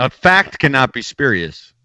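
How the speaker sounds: slow, deliberate, word-by-word delivery. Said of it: "we both went with a fucking Dennis Miller impression".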